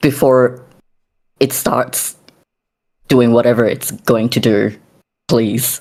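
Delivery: desperate, halting pleading, breaking up mid-phrase. Voicing a character holding a child away, begging: desperate pleading voice. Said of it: "The desperation in his voice".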